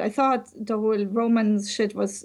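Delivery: ordinary delivery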